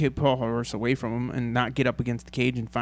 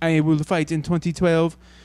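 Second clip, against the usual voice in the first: put-on French Canadian accent, raised, high and loud; 5 semitones higher, 6 dB louder than usual. Retelling GSP's comeback training video, GSP's French Canadian accent. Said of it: "in his best French Canadian accent goes".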